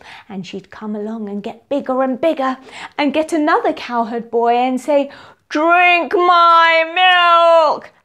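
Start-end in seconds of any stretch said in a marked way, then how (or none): 5.5-7.8 loud, menacing witch voice, drawn-out my. Acting out a witch offering milk to a cowherd boy: scary witch voice. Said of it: "a scary little witch".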